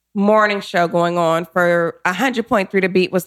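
normal talking voice

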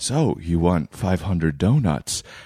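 porn-style film voice. Retelling a commercial take, asking about 500 donuts like the Matrix man mixed with porn. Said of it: "say it like the man in the Matrix mixed with pornography".

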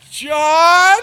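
shrill, very high, loud, long frightened cry. Acting out a horror movie character running toward a sound: acting out a horror movie victim calling out. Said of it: "starts running toward the sound".

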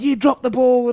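mock screaming. Quoting a woman who screamed at the speaker while pointing: retelling a scream. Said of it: "she's just screaming at me".

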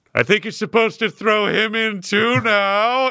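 high, shouted yell. Voicing a character who calls out from the river: yelling. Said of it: "yells Butthole from the river".

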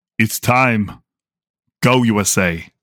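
very slow, measured, drawn-out delivery, each word stretched. Retelling a short video clip in Arnold Schwarzenegger impression. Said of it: "Arnold Schwarzenegger's face, and he just goes".

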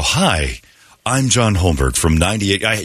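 slow, measured, deliberate announcement-style voiceover. Speaker retells recording his Safeway store voiceover, in slow voiceover delivery. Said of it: "You have to do it like all slow and stuff".

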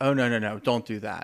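put-on slurred speech. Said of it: "kinda slurring off".

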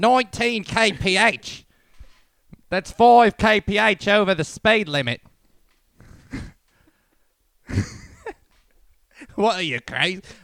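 loud, shrill, high put-on New Zealand accent. Playing a traffic cop stopping a speeding driver, New Zealand accent. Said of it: "I think I'm doing New Zealand".

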